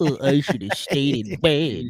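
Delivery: soft, mopey, sad hound-dog voice. Showing the others how it sounds, a droopy dog impression. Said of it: "putting on my droopy dog impression".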